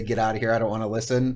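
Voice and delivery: ordinary talk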